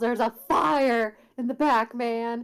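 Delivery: shouting in character voice. Playing a character who pretends to warn guards of danger: yelling in character. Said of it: "and yells".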